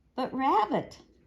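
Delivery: affronted, injured tone. Reading a story, Pooh protests to Rabbit, offended tone. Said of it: "said Pooh in an offended tone of voice".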